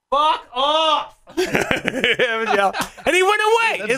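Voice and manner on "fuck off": shrill, high-pitched, irritated yell. In bed and tired while someone hits the door, retelling a yell. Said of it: "I'm just yelling".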